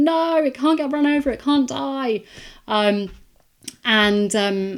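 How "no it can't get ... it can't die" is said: frantic, high, loud panicked screaming. Retelling a rabbit on a roundabout she was driving round: retelling own panicked screaming. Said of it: "I started screaming and panicking".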